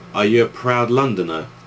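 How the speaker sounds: ordinary talk, nothing marked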